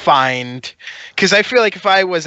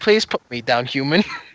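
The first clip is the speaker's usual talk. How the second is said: put-on dog voice; 2 semitones lower than usual. Voicing a held dog asking to be put down: voicing the dog. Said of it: "He's just like".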